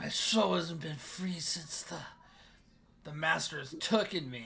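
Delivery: words hissed out like a snake, creature voice. Game master voices a character hissing back at a player's promise. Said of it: "And he hisses at you, and he goes".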